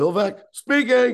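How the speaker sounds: very high, loud, half-deaf shouting yell. Retelling a phone call to a baseball team, imitating Bill Veeck yelling. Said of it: "he's yelling at me 'cause he's sort of deaf".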